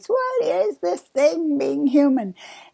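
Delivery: soft, put-on elderly woman's voice. Talking about being human, repeating the question in an old lady voice. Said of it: "I'm doing that in my in my old lady's voice".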